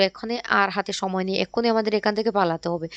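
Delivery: ordinary delivery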